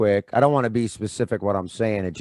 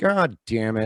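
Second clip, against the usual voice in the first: put-on voice with a scolding tone. Retelling a message done for his aunt: Adam Egan impression. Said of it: "I just did Adam shitting on himself".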